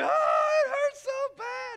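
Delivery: put-on, very high, very loud crying wail of pain. Retelling getting spray in the eyes at age four, acting out crying as a child. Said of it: "and I'm crying".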